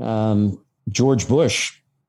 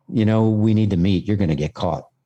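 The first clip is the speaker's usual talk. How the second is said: put-on quiet, hushed voice. Retelling what a man said, leaning into the phone: imitating someone speaking quietly. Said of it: "as he quietly said".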